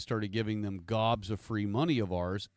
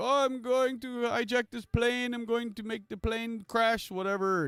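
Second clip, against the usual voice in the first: mock shrieking scream, pitched very high; 13 semitones higher than usual. Retelling a video of a man on a plane aisle; retelling a scream. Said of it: "he's like screaming it in the aisle".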